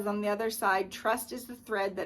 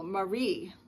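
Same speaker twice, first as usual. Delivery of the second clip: Marie with stress on second syllable -rie. Reading pronunciation notes for names, stress on second syllable of Marie. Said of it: "accented on the second syllable".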